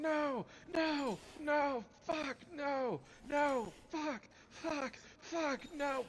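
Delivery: acted, frantic, nonstop, very high panicked screaming. Recounting enemies leaping from off screen at them, retelling repeated screaming. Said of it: "stop repeatedly screaming two words".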